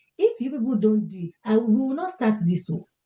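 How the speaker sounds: Nigerian English accent coming through. Host rallying a workshop audience before starting: Nigerian accent. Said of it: "my Nigerian accent has to come out".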